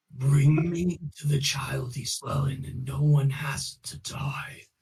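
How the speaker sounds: mysterious, disembodied voice. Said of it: "what did I do the voice for last time?".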